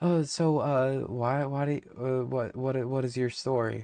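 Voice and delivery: awkward, skittish, halting stammer, tripping over every word. Retelling how an awkward man asked their story, imitating skittish stammering. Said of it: "He was like he was skittish".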